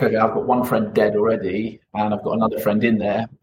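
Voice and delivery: plain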